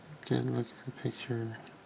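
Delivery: very soft, very quiet under-the-breath murmur. Working through an assembly, the speaker is speaking softly.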